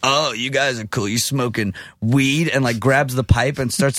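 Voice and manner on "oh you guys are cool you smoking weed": put-on drunk young woman's speech. Retelling what a girl at a party said, imitating a drunk girl. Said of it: "she's, like, drunk and she thinks she's hot shit".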